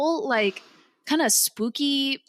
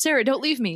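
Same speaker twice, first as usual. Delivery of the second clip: flat, emotionless put-on voice. Retelling a movie death scene line: imitating Eddie Murphy's emotionless delivery. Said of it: "there's zero emotion in his voice".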